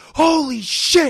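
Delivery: mock very high, very loud maniac whoop. Retelling getting a call from the manager, retelling an excited yell. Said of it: "I start yelling like a fucking maniac".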